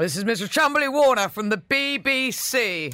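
put-on old radio announcer voice. Recalling radio school, the speaker shows how 1960s announcers spoke in an old-fashioned radio announcer voice. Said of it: "the old announcers and they used to speak like that in the 1960s".

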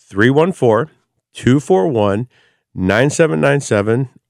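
unhurried, deliberate pace. Host giving the call-in number for a pizza giveaway, slow and deliberate. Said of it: "I'll do it real slow".

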